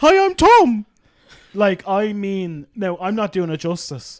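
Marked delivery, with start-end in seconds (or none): 0.0-0.8 very high, loud, shrill, squeaky cartoon mouse voice. Describing a date whose voice sounded like Mickey Mouse, imitating Tom's Mickey Mouse-like voice. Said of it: "He could have been Mickey Mouse's voice actor".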